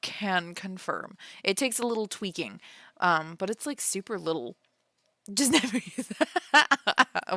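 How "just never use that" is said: put-on high, slow valley girl voice. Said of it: "What, the Valley Girl voice?".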